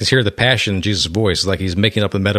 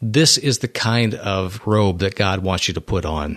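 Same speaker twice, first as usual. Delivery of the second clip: ordinary delivery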